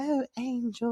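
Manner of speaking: very high-pitched, put-on girly voice. Retelling how a character mimicked others: imitating someone doing a girl's voice. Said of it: "the way he's saying the girl's voice".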